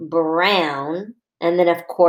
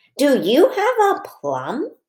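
clear asking voice, pitch lifting on plum; 8 semitones higher than usual. Teaching the listener to ask a question while pointing to the bubbles, question voice. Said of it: "I'll do it again".

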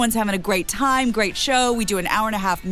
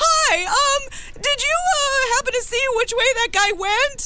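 put-on squeaky teenage boy voice, much higher pitch. Retelling a young hotel staffer asking a question, in a squeaky Greg Brady voice. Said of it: "in his little squeaky Greg Brady voice".

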